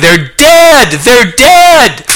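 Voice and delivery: put-on high, loud child's scream. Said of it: "they're crying".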